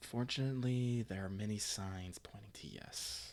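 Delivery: under the breath. Asked a question by a man, Arma replies: Arma, lowered voice. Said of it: "Arma kind of lowers uh, her voice".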